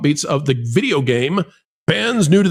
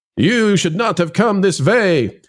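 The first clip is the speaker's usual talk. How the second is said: put-on Norwegian accent; 3 semitones higher than usual. Recalling the accent from the Maelstrom ride at Disney World, Maelstrom ride accent. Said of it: "You remember the Maelstrom accent".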